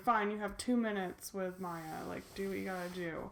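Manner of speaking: usual speaking voice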